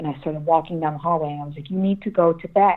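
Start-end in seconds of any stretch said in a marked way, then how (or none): 1.7-2.8 put-on fed-up near-shout, firm and frustrated. Retelling walking down the hallway, frustrated: retelling a frustrated yell. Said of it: "basically yelling at this point".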